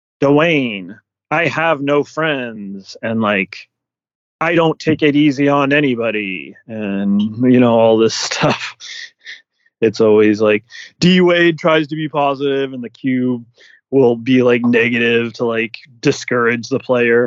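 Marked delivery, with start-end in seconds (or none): 0.2-6.6 machine-like robot voice. Describing a show where the Cube talks back to Dwayne: the Cube's robot voice. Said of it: "it acts like it's a robot voice".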